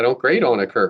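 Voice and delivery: ordinary talk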